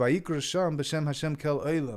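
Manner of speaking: normal talking voice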